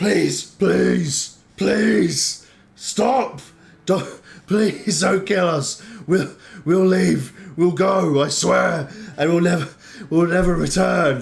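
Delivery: desperate, high-pitched and loud pleading voice. Voicing a kneeling bugbear leader begging the heroes: begging for mercy. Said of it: "drops to his knees and beckons the others".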